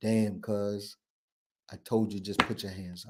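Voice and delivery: put-on low, flat, expressionless monotone. Retelling the filming guy's words after police fired, in a flat expressionless monotone. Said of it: "There's no expression".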